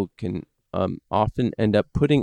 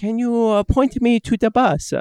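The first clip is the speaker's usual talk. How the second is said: Italian-sounding put-on accent, much higher and louder; 14 semitones higher, 3 dB louder than usual. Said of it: "sounds Italian".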